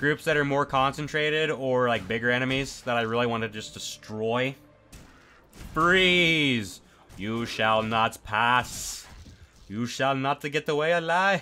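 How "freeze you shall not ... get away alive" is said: unplaceable put-on accent, much slower. A player voicing lines while using a freeze ability, in an unplaceable put-on accent. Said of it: "I don't know what that accent was supposed to be".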